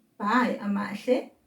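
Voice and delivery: ordinary talk, nothing marked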